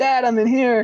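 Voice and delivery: mock shrill, very high child's scream. Retelling a scene where a trapped kid pounds on glass: imitating a kid screaming. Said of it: "he's pounding on the glass and he screams".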